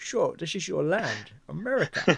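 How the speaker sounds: put-on Scottish accent. Joking about a Scotsman playing a Russian captain: Sean Connery accent. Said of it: "Sean Connery's accent".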